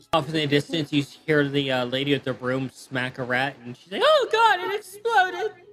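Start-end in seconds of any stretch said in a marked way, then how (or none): 4.0-5.5 very high, loud, drawn-out delivery. Voicing a lady with a broom who smacks a rat: Rose from Golden Girls voice. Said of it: "why do I hear Rose saying that?".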